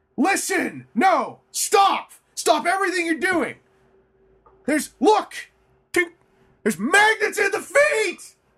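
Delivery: very high, swooping, excited yelling. Acting out telling a whole room about a discovery, retelling an excited yell. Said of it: "yell as excitedly as I'm yelling".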